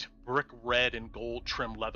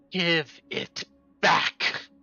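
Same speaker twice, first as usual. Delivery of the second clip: raised, high-pitched hissing voice; 5 semitones higher, 5 dB louder than usual. A narrator voices a character turning to another character, hissing. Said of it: "he hisses".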